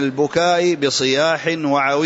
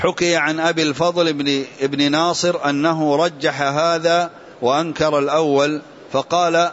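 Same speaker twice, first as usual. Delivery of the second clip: ordinary talk, nothing marked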